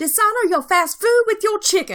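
very high cartoon voice. Reading a message aloud in the voice they heard it in: Mushu voice. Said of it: "read this in the voice that that I heard it".

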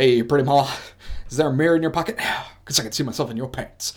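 very loud, belted cartoon hunk voice. Imitating Johnny Bravo hitting on a woman: Johnny Bravo impression. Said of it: "that is a top-notch impression".

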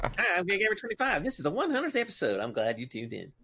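high, swooping, bouncy cartoon voice. Redoing the show intro when asked: sounding like The Simpsons. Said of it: "It sounded like Simpsons".

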